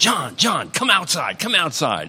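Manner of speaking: put-on raspy yell. Answering the phone in the guest house, imitating Jack's raspy yell. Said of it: "He was yelling on the phone in his raspy voice".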